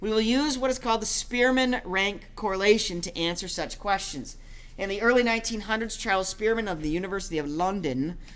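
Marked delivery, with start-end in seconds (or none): 7.5-8.2 bad put-on British accent on "London". Mid-explanation, saying London in a bad British accent on London. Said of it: "that was my bad British accent".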